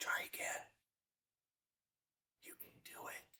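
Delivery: barely audible, very quiet, soft, breathy whisper. A speaker voicing the winner's inner thoughts to an audience: whisper. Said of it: "whispers like this".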